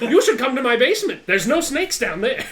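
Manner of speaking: unhinged, high-pitched, very loud crazy voice. Imitating the crazy archer from the Lost City: imitating the crazy Tabaxi archer. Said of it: "like the crazy Tabaxi archer in the Lost City said".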